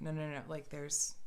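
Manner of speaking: usual speaking voice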